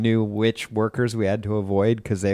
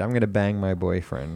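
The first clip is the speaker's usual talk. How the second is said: ordinary talk, nothing marked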